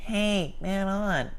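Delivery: very high, nasal voice, from the nose. Showing the annoying way to call for the ball, in a nasal voice. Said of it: "saying it from your nose".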